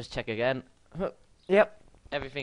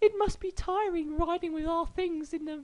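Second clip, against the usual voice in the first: very high, fake girly voice. Putting on a girl voice for the lines said to Joe. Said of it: "I should put on a girl voice".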